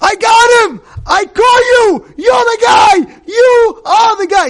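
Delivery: mock very high, loud shout, you stretched long. Retelling how a man caught a thief: retelling a scream. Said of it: "And he screams".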